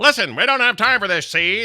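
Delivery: very high-pitched nineteen-twenties announcer voice. Recalling a movie role, the speaker quotes a studio head in Lovitz 1920s announcer voice. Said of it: "that whole like thing he does with that voice".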